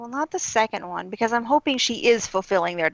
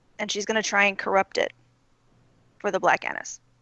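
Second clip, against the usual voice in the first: ordinary talk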